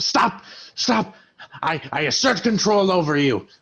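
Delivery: frantic, panicky voice, high and panicked. A game master voices a foe during combat, panicked. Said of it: "This guy starts to panic".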